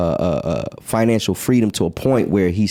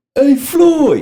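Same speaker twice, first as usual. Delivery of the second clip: deep, louder, imitated New York accented voice; 6 dB louder than usual.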